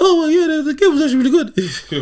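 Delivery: voice flips to shrill, booming, very high and loud. Imitating a player in interviews switching voices: Tyrese Haliburton changed interview voice. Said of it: "talking like this, and then he'd be like".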